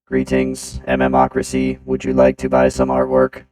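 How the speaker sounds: very loud, monotone, machine-like robot voice. Trying out a robot voice to greet listeners: robot voice. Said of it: "Let's try it. Robot voice".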